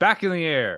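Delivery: loud, high shouted yell. Yelling up at a ship in character, ordering it back into the air: loud in-character yelling. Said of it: "I'm saying it loud as shit".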